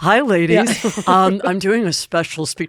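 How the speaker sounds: very slow, drawn-out, unnaturally deep voice. Playing Elizabeth Holmes in prison, greeting the ladies in a low, weird Elizabeth Holmes voice. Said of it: "your voice just got low; that weird voice".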